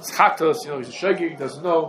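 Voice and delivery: ordinary delivery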